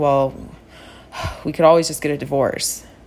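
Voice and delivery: put-on mumble under the breath. Recalling a late-night talk with a spouse, retelling a mumble under the breath. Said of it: "he mumbles under his breath".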